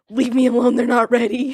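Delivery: loud, demonic, possessed-sounding voice. Acting out a hedge witch caught baking cookies: voice of a demon. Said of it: "you turn in like a voice of a demon".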